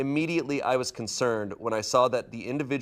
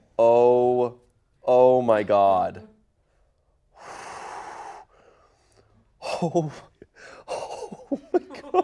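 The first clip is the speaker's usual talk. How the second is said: very slow, loud laughing, drawn-out "oh"; 5 dB louder than usual. Reacting to a story about a donation mix-up, laughing while talking. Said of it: "I'm laughing 'cause this is an insane situation".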